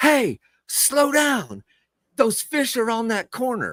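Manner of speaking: mock yell, pitched very high and swooping. Retelling a man on the water yelling at the speaker while trolling, imitating a man yelling. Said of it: "the dude starts yelling at me".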